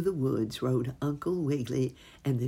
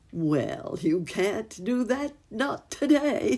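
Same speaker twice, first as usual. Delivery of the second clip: laughing, pitched-up voice, spoken through a laugh; 7 semitones higher than usual. A narrator reads a character's reply to a fox, laughing while speaking. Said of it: "laughed Uncle Wiggily".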